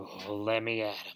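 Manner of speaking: low, mumbled, muttered aside under the breath. Hearing a speaker mock him as host, Toad mutters. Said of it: "muttered Toad".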